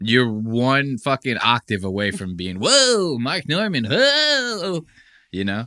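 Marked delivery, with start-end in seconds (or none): 2.6-4.8 high, slow comic drawl with each whoa stretched. Showing how an impression sounds: Aziz Ansari impression. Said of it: "if you're doing an Aziz impression".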